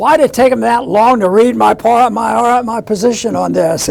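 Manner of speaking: loud, facetious, mock-exasperated delivery.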